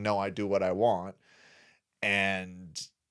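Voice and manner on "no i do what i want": normal talking voice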